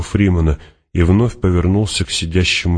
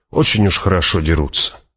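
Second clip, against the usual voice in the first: ordinary delivery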